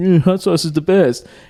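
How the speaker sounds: odd, high, jeering put-on voice. Retelling how someone mocked Tom by repeating his words: mocking Tom in weird voice. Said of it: "mocked him and said it in a weird voice".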